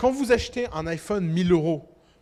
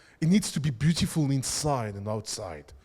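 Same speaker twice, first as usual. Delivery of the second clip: put-on posh English accent, pitched low; 5 semitones lower than usual. Speaker mocks an iPhone pitch, quoting its designer in a Jony Ive impression, English accent. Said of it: "avec son accent anglais, très important l'accent anglais".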